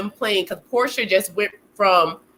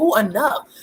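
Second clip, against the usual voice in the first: exasperated, agitated, fed-up outburst; 4 semitones higher than usual. Imitating Ralph getting agitated while walking through the house: imitating Ralph getting agitated. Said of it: "Ralph getting agitated".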